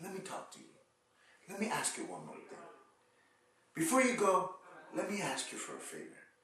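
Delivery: grave, serious, important-sounding delivery. Showing how to ask someone a favor before they go, lowered voice. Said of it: "you lower your voice".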